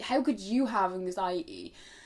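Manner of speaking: normal talking voice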